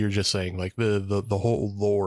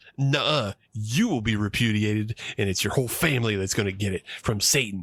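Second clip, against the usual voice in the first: unrepentant, no-punches-pulled defiance. Retelling a character's reply to the Grand Inquisitor: imitating a defiant nuh-uh retort. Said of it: "she for sure does a real nuh-uh you".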